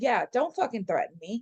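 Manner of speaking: ordinary talk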